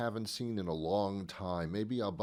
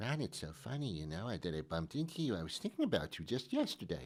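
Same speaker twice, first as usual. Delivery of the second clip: put-on woman's voice, lower and quieter; 2 semitones lower, 5 dB quieter than usual. Retelling a chance meeting, the speaker plays a woman greeting ron, imitating a woman's voice. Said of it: "that's my woman's voice".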